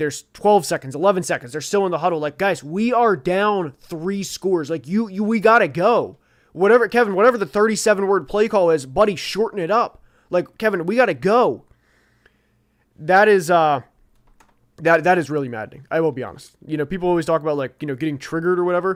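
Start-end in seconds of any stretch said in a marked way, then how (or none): 2.4-11.7 acted out, urgent, frustrated yelling. Describing watching a game, acting out yelling at the coach on TV: imitating screaming at the TV. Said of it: "are screaming at the T V".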